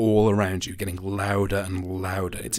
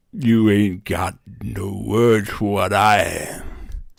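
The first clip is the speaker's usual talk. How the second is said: put-on loud, wet, slurring creature voice; 6 dB louder than usual. Narrating a tabletop scene, voicing the thing that answers a player, wet, slurring voice. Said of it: "the laughter change into a wet, slurring voice".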